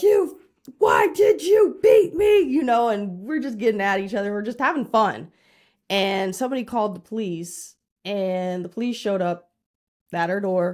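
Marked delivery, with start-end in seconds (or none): 0.0-2.4 very high, loud, drawn-out screaming. Retelling yelling at an opponent during Mario Kart: imitating own screaming. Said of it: "I'm screaming like".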